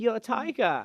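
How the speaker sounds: put-on vague European accent, very high pitch. Picturing a flashy photo shoot and calling out: vague european accent. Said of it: "a vague European accent".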